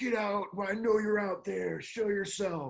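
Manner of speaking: high-pitched, loud yell.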